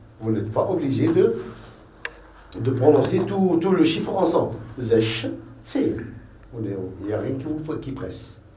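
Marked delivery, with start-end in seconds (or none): 4.8-6.1 pause between sech and zehn. Explaining how to say a number in two parts: pause between sech and zehn. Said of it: "Vous dites sech, vous marquez pause, puis zehn".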